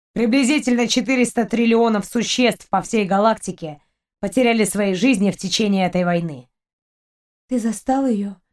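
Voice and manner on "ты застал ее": barely above a whisper. Narrator reads a woman's question to the captain, almost whispering. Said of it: "почти шепотом спросила Кристина".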